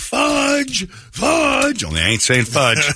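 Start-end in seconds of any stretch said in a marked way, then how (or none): 0.0-1.8 panicked, frantic screaming, shrill and very high-pitched. Retelling walking toward a kid in the road while holding her dog, retelling a scream. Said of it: "I am just screaming".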